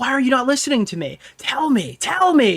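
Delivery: small, strained, high-pitched half-yell, mild. Retelling audio of a man screaming at the top of his lungs: imitating someone screaming. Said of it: "him screaming at the top of his".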